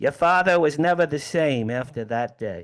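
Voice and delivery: put-on strong New York Brooklyn accent.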